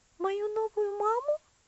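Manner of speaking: high, startled, genuine, open astonishment. Narrating Elsie answering a girl's question: genuinely surprised. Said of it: "переспросила Элси с неподдельным удивлением".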